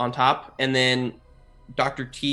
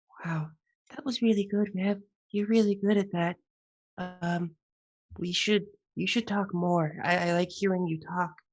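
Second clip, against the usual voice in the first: really quiet, soft, high, hushed voice; 6 semitones higher, 5 dB quieter than usual. Voicing Olivia as a game master, speaking really quietly. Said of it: "really quietly".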